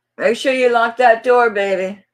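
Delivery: loud, high-pitched yelling. Speaker calls out to someone about the door, yelling. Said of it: "Sorry, guys, yelling in your ear".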